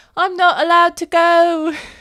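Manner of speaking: put-on very high, loud tiny Irish girl voice. Retelling what a girl called out from her house, Mag's precious little voice. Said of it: "the most precious voice ever. Little tiny Irish girl".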